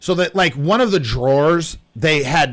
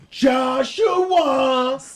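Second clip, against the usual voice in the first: mock shrill yell, pitched very high; 9 semitones higher than usual. Retelling a phone argument with a debt collector: imitating a yell. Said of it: "Yelling back and forth".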